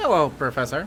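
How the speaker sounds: basic, generic robotic voice. In an acted scene, greeting the Professor in a generic robot voice. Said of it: "basically generic robot voice".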